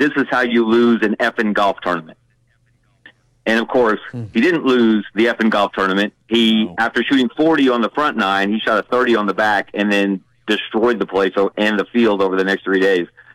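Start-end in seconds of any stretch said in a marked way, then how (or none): 0.0-2.2 imitated growling voice. Retelling what a golfer said after he couldn't find his ball: retelling a growl. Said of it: "but he growled".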